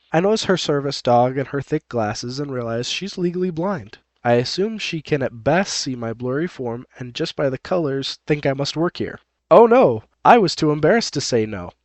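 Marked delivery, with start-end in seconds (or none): none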